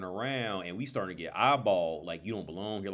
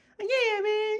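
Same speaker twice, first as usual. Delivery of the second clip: very high, raised, light voice, a bit loud; 5 dB louder than usual. Imitating a childhood friend's voice: Chris Tucker-like voice. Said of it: "Almost like a Chris Tucker kinda voice".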